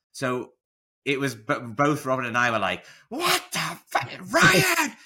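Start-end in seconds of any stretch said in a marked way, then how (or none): 3.1-4.8 shrill, very high, loud all-out screaming. Speaker retells how she and Robin reacted to Ryan: retelling a scream. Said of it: "Like literally screaming at her".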